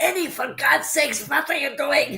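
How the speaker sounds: put-on German accent, called out. Imitating her mother scolding her: imitating her mom's German accent. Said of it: "she still sounded German".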